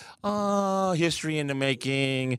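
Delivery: slow, casual, offhand, unbothered nonchalant tone. Mocking another speaker's offhand remark about the Super Bowl: imitating a nonchalant tone. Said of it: "you're sitting here nonchalantly talking about".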